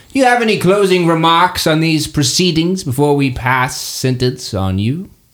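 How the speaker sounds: put-on ancient, old headmistress or professor character voice. Presiding over a trial, the oldest headmaster asks the accused for closing remarks; old headmistress character voice. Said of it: "[name], the professor of conjuration. It has been a long day, a long year. She's the oldest of these these headmasters".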